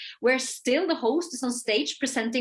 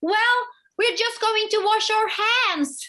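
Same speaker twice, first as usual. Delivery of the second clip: put-on play-acted, very high shouted child's voice; 10 semitones higher, 3 dB louder than usual. Retelling a girl calling out into the room: imitating a child shouting. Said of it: "she shouts into the room".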